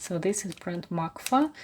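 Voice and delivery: ordinary talk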